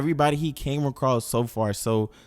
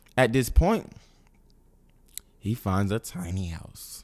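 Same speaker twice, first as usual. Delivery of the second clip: voice cracking mid-sentence; 3 semitones lower than usual. Narrating a video recap to viewers, voice cracking. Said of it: "My voice cracked".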